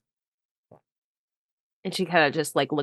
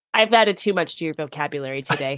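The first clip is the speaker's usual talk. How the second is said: normal talking voice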